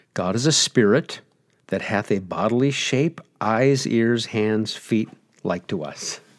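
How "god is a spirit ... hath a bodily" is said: usual speaking voice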